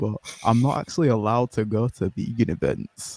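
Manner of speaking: quiet, low stage whisper. With his sister in the next room, the speaker explains something while whispering. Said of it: "I gotta whisper in it".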